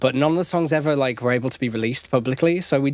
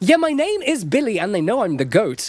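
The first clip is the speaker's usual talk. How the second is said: posh British narrator voice, pitched up; 8 semitones higher than usual. Showing how the Billy Kid line sounds when it comes out British: posh British Billy Kid voice. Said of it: "sounding like I'm reading a Harry Potter audiobook".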